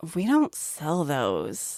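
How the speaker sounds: put-on soft, sing-song teenage-sounding tone. Retelling asking the teenager at the counter for an item, imitating the counter teenager's tone. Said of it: "exactly that tone of voice too".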